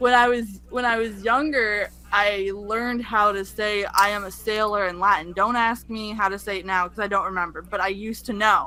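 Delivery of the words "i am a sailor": ordinary talk, nothing marked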